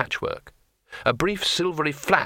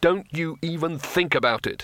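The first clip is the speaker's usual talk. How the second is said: threatening, menacing tone; 3 semitones higher than usual. Narrator reads the wizard's warning to the smiling tourist: menacing. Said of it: "added Rincewind menacingly".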